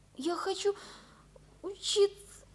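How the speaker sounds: breathy whisper through tears. Speaking to the man she came to see alone, crying. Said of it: "не плачь".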